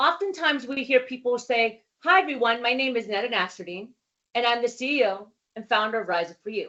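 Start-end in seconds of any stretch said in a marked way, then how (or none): 2.0-6.7 energy dropping away, trailing off by last words. Public speaking tip, a sample self-introduction: trailing off at phrase end. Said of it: "the last part of the phrase kind of falls off the cliff".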